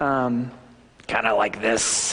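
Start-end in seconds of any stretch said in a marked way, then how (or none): 1.3-2.1 put-on low, rough, gravelly old coach voice. Describing his old high school coach, the speaker imitates the coach's gravelly voice. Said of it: "he had a real gravelly voice".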